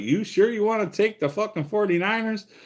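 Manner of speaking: put-on very high-pitched yell. Telling a story, he repeats what he yelled to his wife in the living room: retelling a yell. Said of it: "I yelled into the living room".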